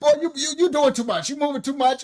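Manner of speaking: mock scolding in put-on old woman voice. Speaker retells his grandma's words to him, imitating grandma scolding. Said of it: "My grandma used to be".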